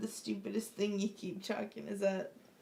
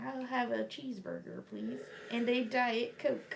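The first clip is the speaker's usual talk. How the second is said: really bad put-on American accent; 2 semitones higher than usual. Retelling how a man did an impression of an American, in a put-on American accent. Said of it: "Can you do an impression of an American?".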